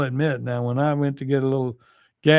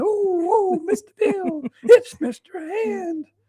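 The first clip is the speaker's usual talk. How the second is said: very high, drawn-out, slow whimpering wail. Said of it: "Sound like Mister Bill from Saturday Night Live".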